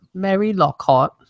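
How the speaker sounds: put-on British lady accent. Suggesting how to say a character's name, in a British accent. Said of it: "I think you should do it in a British accent".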